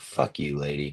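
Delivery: fed-up, angry, exasperated outburst. Retelling own reaction to a player's slow roll: retelling own angry outburst. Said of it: "Why you mad?".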